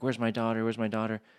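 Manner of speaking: acted, frantic, rushed, panicky voice. Retelling a mother rushing in during her daughter's test drive: imitating someone freaking out. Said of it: "was freaking out".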